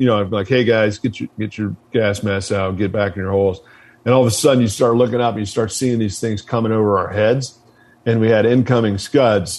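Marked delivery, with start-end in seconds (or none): none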